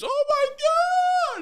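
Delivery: put-on very high shrill scream, my drawn out. Retelling how a woman reacted to a rider's fall: imitating a scream. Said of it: "She screams".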